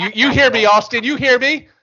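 very high, very loud, booming shout. Calling out to austin during a football chat, yelling. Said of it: "I'm yelling".

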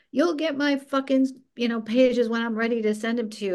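put-on scream. Retelling what he said when asked for approved pages, retelling a scream. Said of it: "Please stop screaming at me".

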